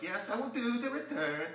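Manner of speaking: high, put-on Dutch accent. The speaker quotes his Dutch friend's reply, imitating Stu's Dutch accent. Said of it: "That's my Dutch accent".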